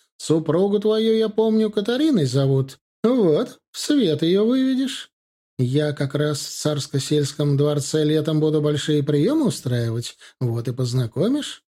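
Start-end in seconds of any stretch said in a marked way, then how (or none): none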